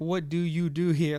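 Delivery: put-on tough Bronx accent full of attitude. Retelling a question Serena asked, imitating Serena's Bronx accent. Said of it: "Like in her Bronx attitude accent".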